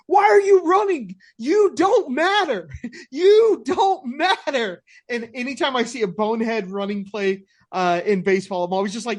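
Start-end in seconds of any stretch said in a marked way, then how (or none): 0.1-4.8 shrill, very high, loud, drawn-out yell. Retelling a bonehead baserunning play, imitating Dustin yelling. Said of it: "Dustin yelling at him".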